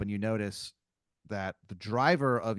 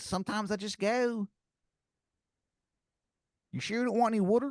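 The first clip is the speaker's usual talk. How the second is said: put-on terrible, very high-pitched Philadelphia accent; 13 semitones higher than usual. Retelling what a driver said during a ride, in the worst philadelphia accent. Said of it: "the worst Philadelphia accent".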